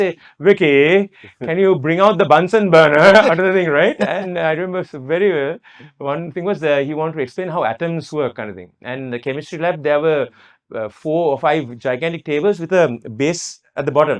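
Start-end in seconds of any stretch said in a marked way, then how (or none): 0.4-2.9 English pronunciation. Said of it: "he used to have this, uh, English accent".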